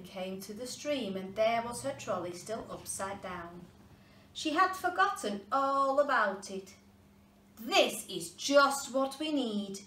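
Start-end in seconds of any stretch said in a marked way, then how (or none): 7.6-9.8 happy, delighted raised cry, pitched up. Little Ying finds her trolley by the stream: cried happily. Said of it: "cried little Ying happily".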